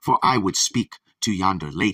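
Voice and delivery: plain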